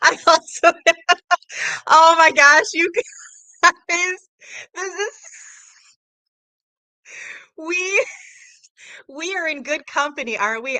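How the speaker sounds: high, loud speech breaking up with laughter. Speaking to the audience as someone joins them, laughing hard. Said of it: "I'm laughing so hard".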